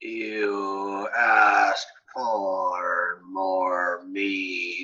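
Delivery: very slow, even voice, every word dragged, "you" stretched. Narrating a tabletop game, the speaker voices the figure at the bar: slow, drawn, muttered voice. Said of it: "a muttered voice, very slow and drawn and steady".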